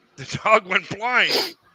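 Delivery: put-on thick Scottish accent. Retelling a comedian's joke about his dog: thick Scottish accent. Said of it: "talking in this thick, thick, thick Scottish accent".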